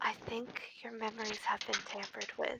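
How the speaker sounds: very quiet, breathy, hushed whisper close in ear. In a role-play scene, a character leans in to another's ear; whispering in his ear. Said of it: "kind of whisper in his ear".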